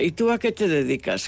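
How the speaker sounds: ordinary talk, nothing marked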